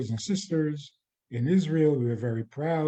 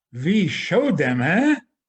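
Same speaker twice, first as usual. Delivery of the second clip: slow, raised-pitch put-on German accent; 3 semitones higher, 6 dB louder than usual. Retelling a patient's parting words to his psychiatrist, in a German accent. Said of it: "he spoke with a German accent".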